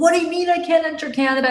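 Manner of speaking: play-acted, very high, heated, pissed-off outburst. Retelling the father being banned from canada: imitating a pissed-off father. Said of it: "my father gets all pissed off".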